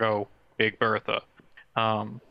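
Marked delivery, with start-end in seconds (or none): none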